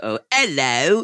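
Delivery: awful put-on British accent, high pitched. Retelling an audition where asked for a British accent: bad British accent. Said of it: "Get my British accent".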